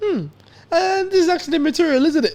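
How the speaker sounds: play-acted disappointed, deflated tone. Retelling looking at the shoe, imitating own disappointed reaction. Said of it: "Why do you sound so disappointed?".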